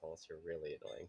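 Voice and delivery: low, very quiet half-whisper under the breath. Narrator voices a character's aside after a promise; half-whispering under her breath. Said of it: "she whispers under her breath".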